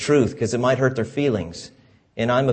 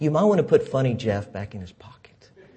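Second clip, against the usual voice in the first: imitated sweet, quiet, soft tone. Retelling what she says to him quietly off to the side, imitating her sweet quiet aside. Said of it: "she just says it so sweetly".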